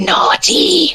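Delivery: sinister, creepy villain voice. Prompted by another speaker to show off a voice, creepy villain voice. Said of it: "That is creepily good".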